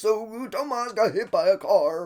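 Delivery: put-on grandpa voice. Retelling a family phone call, repeating the grandpa's words in a grandpa impression. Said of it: "That's my grandpa impression".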